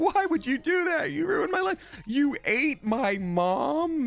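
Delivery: put-on distressed, anguished pleading voice. Describing how characters react to evil choices: imitating a distressed game character. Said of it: "people incredibly well voice acting".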